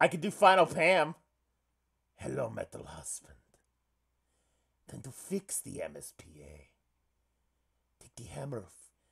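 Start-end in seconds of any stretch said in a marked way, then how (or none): 2.1-8.6 put-on deep, soft Russian accent. Speaker tries out an accent for the line, deep Russian accent. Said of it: "Deep Russian accent".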